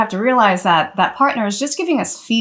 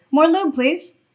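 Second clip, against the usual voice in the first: acted calm, gentle, matter-of-fact, pitched slightly up; 8 semitones higher than usual. Showing how to give a partner short feedback: gentle, matter-of-fact. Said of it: "just with a gentle tone of voice and just just matter of fact".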